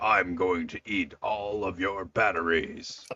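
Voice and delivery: very deep, low character voice. Playing with a nephew's toy, Optimus Prime voice. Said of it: "So it's just me going".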